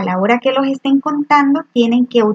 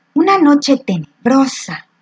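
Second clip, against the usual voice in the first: spooky line read fearfully, frightened; 2 semitones higher than usual. Reading a short story aloud to show how intonation changes it: fearful. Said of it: "Yo lo leeré con un tono de miedo".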